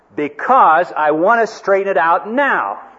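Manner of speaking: put-on loud angry, deliberate tone. Speaker retells his reply to a woman who then told him not to get angry, retelling an angry-sounding reply. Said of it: "don't get angry".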